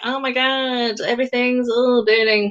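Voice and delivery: imitated American accent. Joking about how serious America is, in an American accent. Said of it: "that's my American accent".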